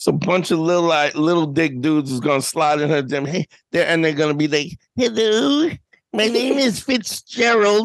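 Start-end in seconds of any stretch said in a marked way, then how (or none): 4.9-7.9 very slow, mocking put-on dude voice. Imitating guys who slide into her messages with a put-on voice. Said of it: "I don't know why he sounds like that".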